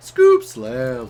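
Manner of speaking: "scoop" high, then sharp drop to low "slam". Reacting to an odd voice line, mimicking it: scoop very high, slam suddenly low. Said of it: "He was like so high pitched and then turned straight away to a low pitch".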